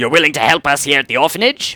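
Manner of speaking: poorly done put-on orc voice, growling while talking. Reading the orphan matron's game dialogue aloud, in a bad orc voice. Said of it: "I'm bad at an orc voice".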